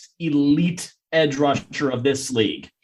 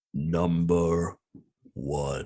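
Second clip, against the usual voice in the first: very deep, very soft, hushed theatrical delivery; 11 semitones lower, 11 dB quieter than usual. Reading out the first pick number for the other host, deep theatrical voice. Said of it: "give me that deep theatrical voice".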